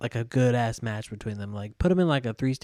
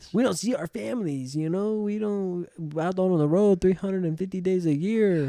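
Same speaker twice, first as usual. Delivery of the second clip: put-on Spanish accent, pitched up; 8 semitones higher than usual.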